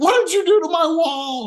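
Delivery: shrill, very high scream. Retelling a phone call where mom screams about the wall: imitating mom screaming. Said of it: "she's screaming at me".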